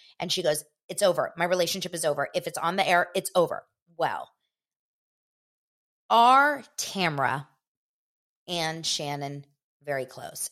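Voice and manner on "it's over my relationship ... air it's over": normal talking voice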